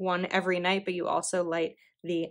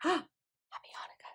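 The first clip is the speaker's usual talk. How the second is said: surprised gasp, much higher and quieter; 10 semitones higher, 9 dB quieter than usual. Reacting to an unexpected Happy Hanukkah, with a gasp of surprise. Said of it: "Did you hear my gasp?".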